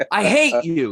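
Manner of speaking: put-on high, loud child's yelling voice. Retelling a family fight, a kid turning on his mom, imitating a kid yelling. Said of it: "he's yelling at the mom and he goes".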